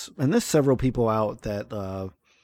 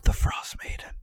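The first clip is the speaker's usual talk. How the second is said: soft, hushed, breathy confiding whisper. Acting out how she leaned in and whispered a name: whispered. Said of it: "she like leans in and she whispers like".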